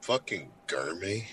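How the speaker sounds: barely audible, hushed, grumbling mutter under breath. Retelling a man's reaction to being singled out, retelling a mutter under his breath. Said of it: "like under his breath".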